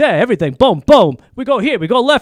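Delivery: football announcer voice. Retelling a movie scene where the announcer draws plays: John Madden voice. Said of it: "And he's doing the voice".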